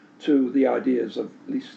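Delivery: ordinary delivery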